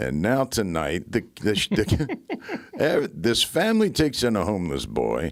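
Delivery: slow, swooping TV crime-documentary narrator voice. Joking while she giggles, doing a Dateline narrator impression. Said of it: "I was acting like I was a guy from Dateline".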